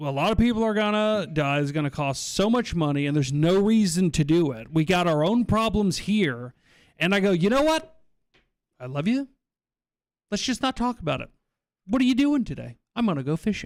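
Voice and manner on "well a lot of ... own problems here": ordinary talk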